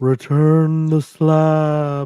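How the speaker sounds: reverberating voice. Voicing a knocking presence heard through the house: reverberating voice. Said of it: "It kind of reverberates as it speaks".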